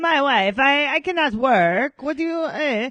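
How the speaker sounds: put-on Eastern European accent. Mimicking a man complaining about his wife: Borat-like accent. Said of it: "everything he says is in, is in like Borat's accent".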